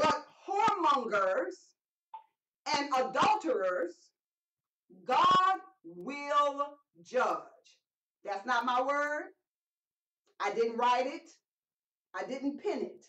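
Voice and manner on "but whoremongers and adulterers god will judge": unhurried, slow, deliberate reading with "will" drawn out. Speaker reading a bible verse aloud to listeners: reading slowly. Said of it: "I'm going to read it slowly".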